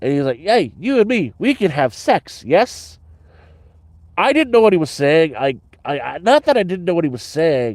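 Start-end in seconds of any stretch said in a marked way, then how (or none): 0.4-3.0 put-on heavy Indian accent laid on thick, high and slow. Retelling a man's absurd proposition to the speaker, thick Indian accent. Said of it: "He had a very thick Indian accent".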